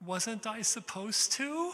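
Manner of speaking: squeaky voice, very high-pitched and very loud. Retelling his own answer to a teacher who stopped the rehearsal, in a squeaky voice. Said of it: "in a squeaky voice".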